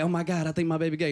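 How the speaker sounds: play-acted, angry, irate, pissed-off outburst. Retelling the sister's reaction to the slumber party: imitating an angry sister. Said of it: "My sister was pissed".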